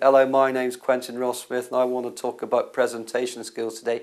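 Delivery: droning, flat, level one-note monotone. Presentation skills advice, showing what irritates an audience: flat monotone delivery. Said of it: "if you're very monotone".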